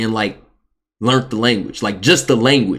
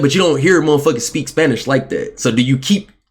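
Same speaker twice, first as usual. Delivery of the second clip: ordinary talk, nothing marked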